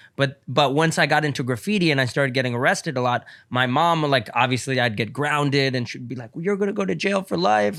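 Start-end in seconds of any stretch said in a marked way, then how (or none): 6.4-7.8 put-on crying voice, higher pitch. Retelling what mom said when grounded after arrests: imitating mom crying.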